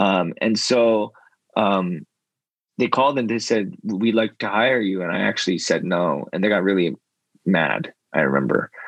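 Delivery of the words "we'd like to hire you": plain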